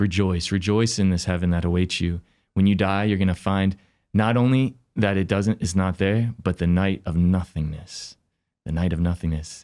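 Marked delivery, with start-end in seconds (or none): none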